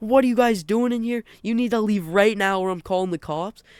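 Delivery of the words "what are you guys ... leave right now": mock man's angry shout, yelled but contained. Peeking around the corner, the speaker retells a guy overheard: retelling a man screaming. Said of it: "Like he's screaming".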